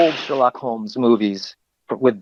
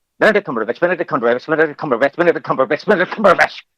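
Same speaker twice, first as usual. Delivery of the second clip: rushed, pitched-up, rattled-off tongue-twister repetition; 5 semitones higher than usual. Trying the repeated name again, the speaker says it faster. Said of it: "if I try it faster".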